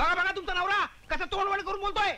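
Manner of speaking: high-pitched heated outburst. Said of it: "हळू बोला, हो".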